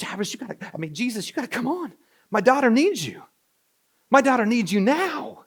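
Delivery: high, frantic, desperate voice. Acting out a desperate father urging Jesus to hurry: imitating a desperate plea. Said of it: "this is Jairus who's desperate".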